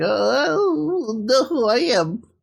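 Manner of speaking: very high, slow, drawn-out wobbly voice. Imitating how someone in a trailer talks: high-pitched wobbly voice. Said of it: "It's just kind of wobbly there".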